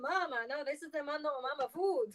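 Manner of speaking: mock Italian voice, failed fake accent. Speaker acting out Italians rejecting cricket flour, in a failed fake Italian accent. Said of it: "So that didn't sound Italian".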